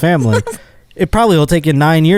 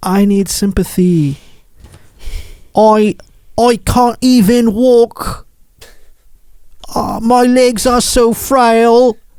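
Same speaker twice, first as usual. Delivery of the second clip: high, cheap, fake put-on British accent; 8 semitones higher than usual. Acting out a man in a tv interview saying he can hardly walk, dollar store british accent. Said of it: "sporting a dollar store British accent".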